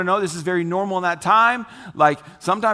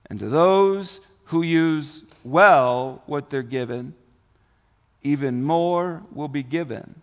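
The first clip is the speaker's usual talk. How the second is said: slow, measured, deliberate reading, words spaced out; 4 semitones lower than usual. Reading a passage aloud so the listener can pay attention: reading slowly. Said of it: "let me read slow".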